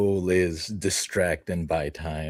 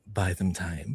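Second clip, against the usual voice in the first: short, soft, hushed half-whisper; 4 dB quieter than usual. Voicing a character grabbing a bike handle: soft half-whisper. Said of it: "in a soft whisper".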